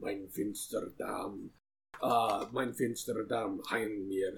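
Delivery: muttered chant-like speech. Voicing a character casting a spell with a pointed finger: muttering a spell. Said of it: "point out his finger and mutter".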